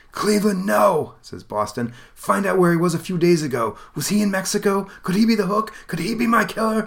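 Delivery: urgent pleading.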